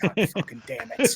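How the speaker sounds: hushed, breathy whispered mutter under the breath. Retelling being recognized by someone while anchored on the lake: imitating muttering under breath. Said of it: "under my breath".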